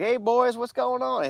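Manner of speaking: put-on high Southern Georgia accent. Greet the boys from the other end of the phone in a Tommy Rich voice, Southern Georgia accent. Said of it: "he's got his little Southern Georgia accent".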